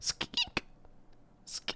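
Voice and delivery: soft whisper right into the ear. Telling how she gets real close and whispers in your ear. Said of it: "she whispers in your ear".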